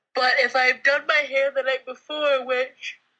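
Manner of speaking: speaking through a yawn. Chatting in a conversation, the speaker keeps talking while yawning. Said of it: "Sorry, yawning".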